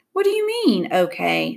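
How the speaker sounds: ordinary delivery, nothing marked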